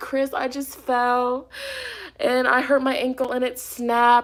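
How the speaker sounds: mock hysterical sobbing, words breaking up. Retelling a phone call to chris after falling in a parking lot, re-enacting hysterical crying. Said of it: "and I'm hysterically crying".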